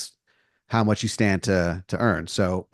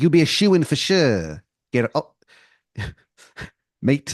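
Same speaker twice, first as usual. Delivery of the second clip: bad put-on English accent, pitched up; 5 semitones higher than usual. Quoting a man's offer about the contest, in a terrible english accent. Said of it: "He's got a really terrible English accent".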